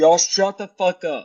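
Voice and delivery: high-pitched, angry yell. Trying to answer a question while others interrupt: yelling. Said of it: "He yelled at me".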